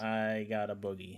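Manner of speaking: plain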